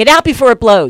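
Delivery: loud, high yelling.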